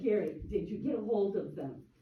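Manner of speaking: ordinary talk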